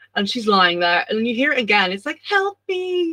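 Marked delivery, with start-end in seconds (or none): 2.3-3.2 put-on very high, small, childlike voice. Retelling a story, voicing the call she hears again: little kid voice. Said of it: "Like a little kid voice".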